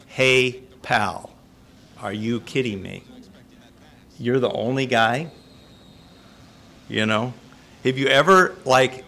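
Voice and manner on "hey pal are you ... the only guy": ordinary talk, nothing marked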